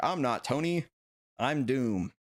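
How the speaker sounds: very slow, weighty, deliberate, dramatic, every word dragged out. Mock-auditioning for a film role, acting as Doctor Doom. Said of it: "That's my best acting".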